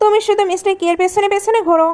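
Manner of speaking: plain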